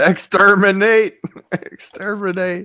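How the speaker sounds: high, dead-flat monotone voice. Reacting to news of a primetime address, the speaker breaks into a Dalek voice. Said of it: "that Dalek voice again".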